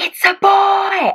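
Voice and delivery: put-on very high shout stretching out the word boy. Retelling the moment the baby was born, imitating Ken shouting. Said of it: "Ken just shouts".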